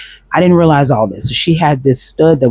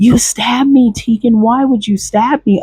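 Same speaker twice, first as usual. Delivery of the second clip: put-on scream, higher; 9 semitones higher than usual. Retelling how a girl in the club accused them: imitating someone screaming. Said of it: "She screams out loud in the club".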